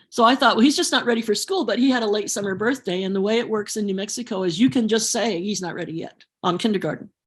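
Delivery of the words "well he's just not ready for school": ordinary delivery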